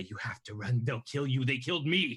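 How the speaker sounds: whispered, put-on old hag voice. In a game, emulating the hag's voice to make it run away, whispered. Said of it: "emulate the hag's voice".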